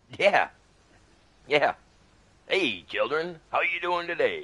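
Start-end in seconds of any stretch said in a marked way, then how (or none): 2.5-4.5 high, swooping, sing-song animated cartoon character voice. Imitating Chef from South Park after naming him as a favorite: Chef voice. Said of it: "But Chef was my favorite".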